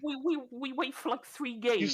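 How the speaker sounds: stuttering, tripping over words. Arguing with others about waiting for games, stuttering. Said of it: "Why you stuttering?".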